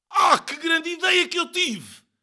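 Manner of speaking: shrill, very high-pitched shout. Narrator reads a character's cry from below as the grate falls, shouted. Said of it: "gritou ele".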